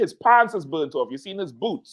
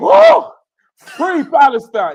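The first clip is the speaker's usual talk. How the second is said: high, loud, slow, desperate cry. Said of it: "He said".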